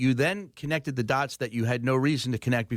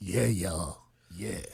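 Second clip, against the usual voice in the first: fake deep voice, lower and quieter; 6 semitones lower, 4 dB quieter than usual. Answering an introduction in the studio: put-on deep voice. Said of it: "My deep voice".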